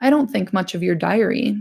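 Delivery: ordinary delivery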